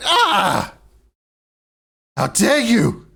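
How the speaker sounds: shrieking outraged scream, very high and very loud. Narrating a scene and voicing the woman's reaction: screaming in outrage. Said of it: "she screams like".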